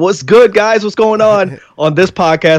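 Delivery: slipping into a natural New York accent. A podcast guest from Queens shows how they talk with friends: New York accent. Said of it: "dip into my New York".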